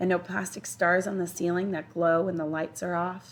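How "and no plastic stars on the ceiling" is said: usual speaking voice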